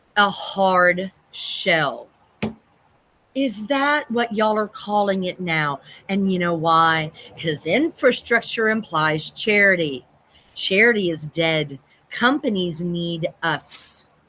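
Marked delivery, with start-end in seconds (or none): 0.1-5.8 exasperated, fed-up, frustrated voice. Speaker apologizes to Sydney for getting frustrated over a term, frustrated. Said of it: "I'm sorry I'm getting frustrated".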